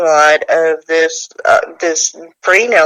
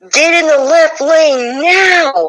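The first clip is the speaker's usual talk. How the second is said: acted full-lunged scream, very high and drawn-out; 11 semitones higher than usual. Retelling a voice heard from the back seat: imitating a man screaming. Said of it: "heard a man's voice scream at the top of his lungs".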